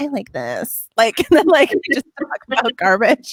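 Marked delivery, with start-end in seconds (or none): 0.0-0.9 soft, creaky vocal fry. Describing a shared habit, the speaker does their weird vocal fry Bachelorette voice. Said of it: "weird like vocal fry Bachelorette voice".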